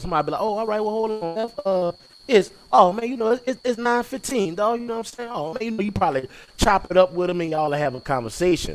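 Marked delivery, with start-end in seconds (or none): 0.4-4.8 mock chatty, friendly, pitched-up tone. Imitating someone from New Orleans answering what time it is: imitating a friendly local. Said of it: "we friendly and shit".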